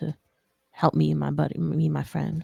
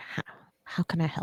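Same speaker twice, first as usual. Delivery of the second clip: low, hushed whisper with dropped tone; 7 dB quieter than usual. Player in character answering a companion, in a lower tone. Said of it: "in a lower tone".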